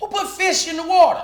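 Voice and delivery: shrill, very loud, high-pitched yell at full volume. Retelling tasting a drink and calling out: yelled out. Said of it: "I yell it out like this".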